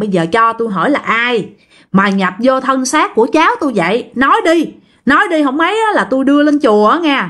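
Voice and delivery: threatening, demanding tone.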